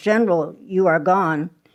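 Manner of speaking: ordinary talk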